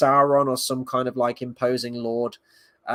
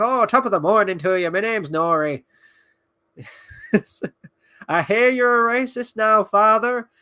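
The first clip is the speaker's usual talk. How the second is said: terrible fake stage-Irish brogue, pitched up; 9 semitones higher, 4 dB louder than usual. Complaining about the show's Harfoots, speaker mocks their really bad stage Irish accent. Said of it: "the really shitty stage Irish accents they're doing".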